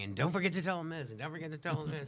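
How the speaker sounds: quick, high voice calling across, toned down. The speaker recounts calling to Mister Gilo across the esports lounge, retelling a yell across a room. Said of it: "I'm yelling at Mister Gilo from across the esports lounge".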